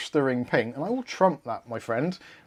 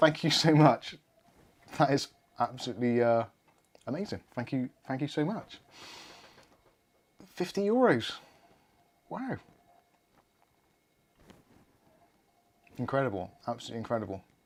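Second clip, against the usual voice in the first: a little choked up, voice catching; 3 dB quieter than usual. Thanking a viewer for a 50 euro super chat, choked up. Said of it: "Choked a little bit there".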